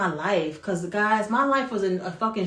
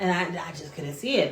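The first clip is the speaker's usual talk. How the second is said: usual speaking voice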